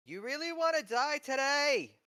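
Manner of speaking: shrill, defiant yell, very high and very loud. Yelling back at a shouting voice before battle: yelling back defiantly. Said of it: "I yell back".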